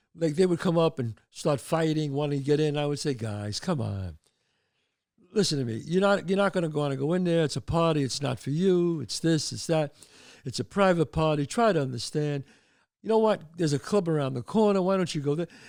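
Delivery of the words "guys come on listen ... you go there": ordinary delivery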